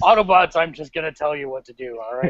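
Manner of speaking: put-on tired voice. Imitating Optimus Prime as he sounds now: tired Optimus Prime voice. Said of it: "Optimus sounds tired".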